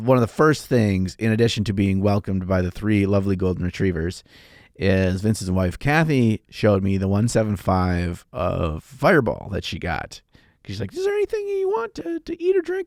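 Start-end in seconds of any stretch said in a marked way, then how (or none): 10.9-12.9 squeaky, very high-pitched voice. Retelling what Vince's wife asked on arrival: imitating Kathy's voice. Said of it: "that's exactly what her voice sounds like".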